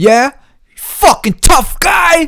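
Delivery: very high, furious, drawn-out yell. Recounting an argument, quoting what the other man said to him: retelling a yell. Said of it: "he's like yelling".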